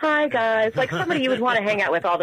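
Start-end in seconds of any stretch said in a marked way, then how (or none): 0.0-0.7 inviting, easygoing, friendly, pitched-up voice. Calling in and imitating the host's great voice: imitating Mary's great voice. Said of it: "she just has this great voice, like".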